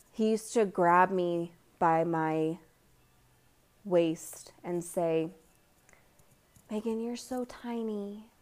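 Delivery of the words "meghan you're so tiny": sweet, high-pitched, endearing voice. A speaker retells what a man used to say while grabbing her waist, in an endearing voice. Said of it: "in the most enduring voice".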